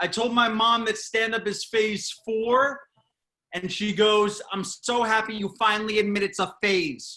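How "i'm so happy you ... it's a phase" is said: put-on Long Island accent.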